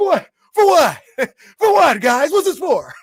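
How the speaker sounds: high, loud, baffled yelp. Doing the coach's reaction again for the viewers: imitating Erik Spoelstra's surprised reaction. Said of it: "I'll do it again".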